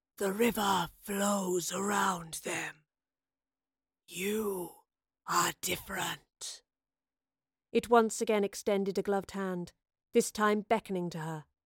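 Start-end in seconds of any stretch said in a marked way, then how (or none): 0.2-6.6 lifeless, soft, slow, hushed dead rasp. A narrator voices the Keeper speaking to the professor, dead rasping voice. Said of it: "was the Keeper. Its immense grey cape billowed around a ceremonial tunic. Its face was shrouded in darkness, / a dead voice called all around her. ... the Keeper rasped. / "You have broken the laws of".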